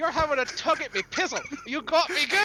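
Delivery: chuckling through the words, very high and loud. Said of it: "Laughs and slaps your shoulder".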